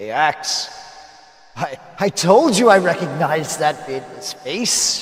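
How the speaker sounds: rough-edged, gruff character voice, called out. Narrating a scene, the speaker voices someone calling from twenty feet away, gruff voice. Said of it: "you hear a gruff voice".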